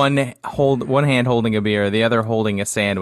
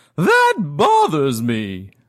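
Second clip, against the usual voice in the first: hoity-toity lady voice, much higher; 5 semitones higher than usual. Pitching to the group how the character Grandma Nutmeg sounds, in a hoity-toity voice. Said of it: "she looks like a hoity-toity kind of lady".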